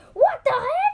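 very high, shrill, loud yell. Retelling what another player yelled when stuck on a swing: imitating someone yelling. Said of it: "She just yelled".

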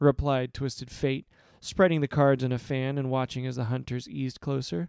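plain reading voice

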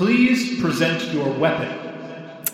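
formal, commanding, authoritative, ceremonial judge-like voice. Narrating a competition as the judge calls for silence, in an authoritative, ceremonial tone. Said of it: "in a very sort of authoritative and ceremonial tone".

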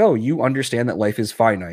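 plain

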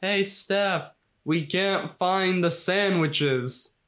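very slow, high, dragged-out whiny voice. Retelling a scene where Jimmy calls from the other room: imitating Jimmy yelling. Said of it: "Jimmy yelling".

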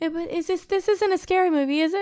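put-on very high, frightened little kid voice. Retelling a kid's questions during a spooky movie: imitating a scared kid. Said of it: "'cause he was scared".

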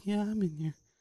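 play-acted scared, frightened child's voice. Retelling a kindergarten kid's answer from a restroom stall: imitating a scared kid. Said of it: "Like, all scared".

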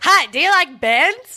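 put-on Canadian accent, cartoon style, high and loud. Joking around with others, doing a South Park Canadian accent. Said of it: "It's like the Canadian like accent".

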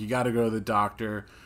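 ordinary talk

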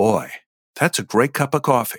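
sincere, heartfelt, feeling-first delivery. Showing different audition takes of one coffee line: as a heart character. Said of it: "if you say it as a heart character".

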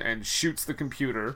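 ordinary talk

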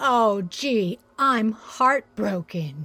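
sarcastic heartbroken tone. Answering news that a helper can't come: sarcastic. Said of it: "do I detect a small hint of sarcasm there?".

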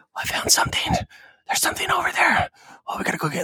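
breathy, barely voiced, hushed whisper throughout. Imitating a game character's voice line: imitating Rambo whispering. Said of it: "he's whispering the whole time".

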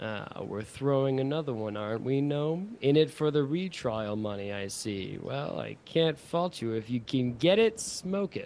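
dropped, slow, knowing voice. Telling a story, the speaker voices the judge addressing the prosecutor in a lowered voice. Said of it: "sort of lowers his voice".

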